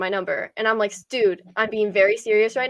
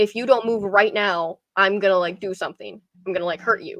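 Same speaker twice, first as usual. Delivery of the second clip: put-on man's voice, defensive and threatening. Retelling a man's words after being told to back off: imitating a defensive man threatening. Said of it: "the dude starts getting really defensive".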